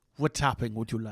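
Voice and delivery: low, soft Spanish-accented voice.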